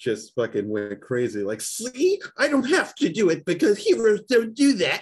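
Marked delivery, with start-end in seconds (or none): 1.6-5.0 very high, hammy, swooping old-cartoon villain voice. In a group conversation, a speaker answers back in a Rocky and Bullwinkle villain voice. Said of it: "sound like a fucking villain from Rocky and Bullwinkle".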